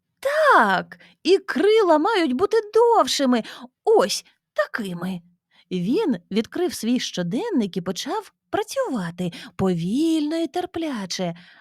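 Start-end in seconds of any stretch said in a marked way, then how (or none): 0.2-5.2 sudden, loud, high shout, "Так" drawn out. A narrator reads a man's line after he suddenly jumps up: shouted. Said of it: "закричав він".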